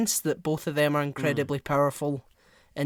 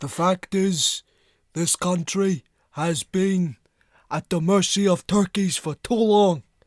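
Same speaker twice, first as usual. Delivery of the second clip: put-on old politician voice; 4 semitones higher, 4 dB louder than usual. Having never actually heard his voice, show someone your Bernie Sanders impression. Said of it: "That's my Bernie Sanders impression".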